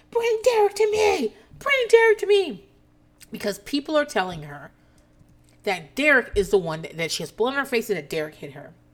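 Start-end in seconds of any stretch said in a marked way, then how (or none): 0.2-2.7 put-on very high, slow, drawn-out screaming. Recounting a fight on a balcony, the speaker acts out a woman's scream, retelling a scream. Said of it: "Ramona is screaming".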